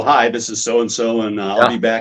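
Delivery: ordinary delivery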